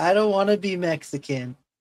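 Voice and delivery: mock tearful child wailing, high and loud. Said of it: "she was crying".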